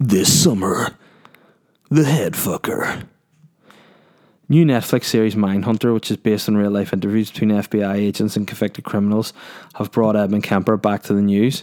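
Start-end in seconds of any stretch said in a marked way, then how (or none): 0.0-3.0 slow film trailer announcer narration voice. Reading a tabloid headline aloud, then doing a film trailer voice. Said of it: "Sounds like an interesting film trailer".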